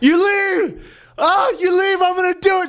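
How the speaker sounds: very high, put-on tearful, blubbering, pleading crying voice. Retelling a fight heard downstairs, quoting the man: imitating a man crying. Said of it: "crying, going".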